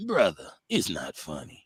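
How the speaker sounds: swooping, animated put-on voice with wide pitch swings. Imitating a commentator dismissing a joke: Stephen A. Smith voice. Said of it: "Smith always sound like he".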